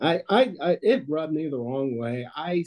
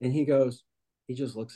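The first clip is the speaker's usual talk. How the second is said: usual speaking voice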